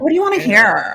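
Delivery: put-on Valley Girl voice. Answering a suggestion to play up a put-on Valley Girl voice. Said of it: "really gotta throw out the Valley Girl thing".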